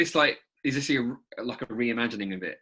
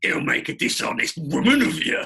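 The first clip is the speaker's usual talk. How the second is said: loud, raised, leering advert salesman voice; 4 semitones higher, 5 dB louder than usual. Quoting the advert's voiceover, sounding like the Resident Evil 4 Merchant. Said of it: "You sounded like the salesman from Resident Evil four".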